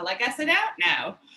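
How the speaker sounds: put-on Australian accent. Retelling what a man said to the group, imitating an Australian accent. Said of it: "in his Australian accent".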